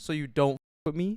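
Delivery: pressed, annoyed, confronting tone. Retelling own words to a group of girls: imitating own pressed confronting. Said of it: "actually pressed, and I was like".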